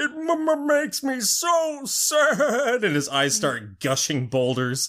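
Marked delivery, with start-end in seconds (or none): 0.0-2.8 put-on weepy giant voice, higher pitch. Retelling the crying mountain begging them to stop: imitating a weepy mountain. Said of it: "the mountain starts getting all weepy again".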